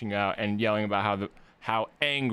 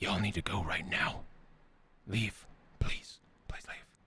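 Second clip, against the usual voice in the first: very quiet, breathy, pleading whisper; 7 dB quieter than usual. In a game scene, the one with the spear and shield tells you to leave, very quietly. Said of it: "says very quietly to you".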